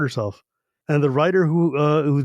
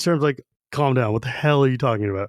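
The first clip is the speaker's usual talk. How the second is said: normal talking voice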